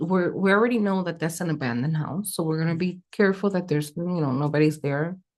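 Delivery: ordinary talk, nothing marked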